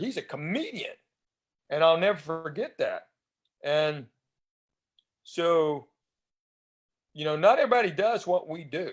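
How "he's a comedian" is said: openly proud, badge-of-honor tone. Retelling how Jerry Seinfeld introduced him: imitating Jerry Seinfeld saying it proudly. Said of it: "he said it with that badge of honor".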